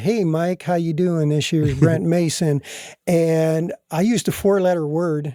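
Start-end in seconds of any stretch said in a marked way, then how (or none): 0.0-2.6 put-on really cool Nashville accent. Retelling a phone call, the speaker quotes the caller introducing himself: Nashville accent. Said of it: "this really cool Nashville accent".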